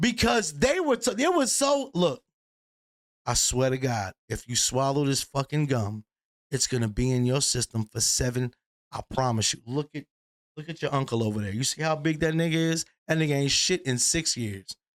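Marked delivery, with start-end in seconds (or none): 1.9-14.7 adult voice, earnest and convincing. Retelling how adults warned about swallowing gum: imitating convincing adults. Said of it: "they said it so convincing".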